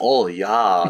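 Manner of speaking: speaking with a put-on German accent. Imitating porn cameramen who have a German accent: imitating a German accent. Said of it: "the German accent".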